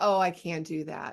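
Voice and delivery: self-pitying woe-is-me tone, dropped very low. Showing the tone used when saying you can't have sugar, low, self-pitying tone. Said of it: "even the tone I use, ... Like it just drops down low. Woe is me, poor is me".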